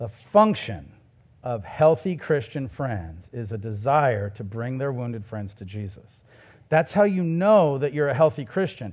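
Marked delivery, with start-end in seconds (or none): 0.0-6.1 slow, low, deliberate, each word drawn out and weighed. Repeating the point to listeners a second time, slower. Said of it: "Can I say that slower?".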